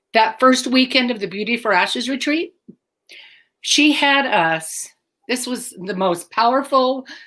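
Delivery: emotional, choked-up voice catching. Deb answering when she really felt forgiven by God, getting emotional. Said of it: "I can't believe I'm getting emotional".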